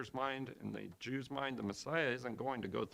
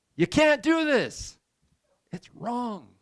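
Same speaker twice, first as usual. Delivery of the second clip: forceful scolding, very loud, high-pitched and slow; 12 semitones higher, 17 dB louder than usual. Showing a congregation what rebuking sounds like: loud rebuking. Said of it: "I didn't mean to be loud".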